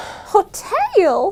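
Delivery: high, rising, squealing Western damsel-in-distress voice.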